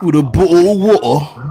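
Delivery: put-on teasing British accent, slow and high. Teasing a guest by imitating their British accent. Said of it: "you're taking the piss out of my accent".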